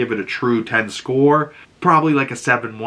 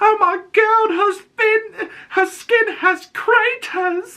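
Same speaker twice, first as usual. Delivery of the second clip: put-on British accent, very high, slow. Retelling a girl imitating a British stepdaughter, in a put-on British accent. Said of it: "she's doing this British accent".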